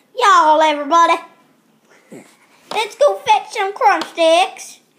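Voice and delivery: put-on country accent. Speaker shows off his accent while presenting his tomato soup bowl: country accent. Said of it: "here's my country accent".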